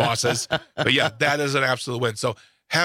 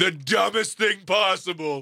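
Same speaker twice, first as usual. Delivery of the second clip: drawn-out high shouting. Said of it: "I'll be like".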